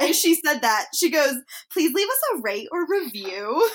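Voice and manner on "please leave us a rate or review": teasing, sing-song host voice. Retelling how the sister mocked the podcast sign-off: imitating her sister mocking her. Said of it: "She was imitating how I talk on the podcast".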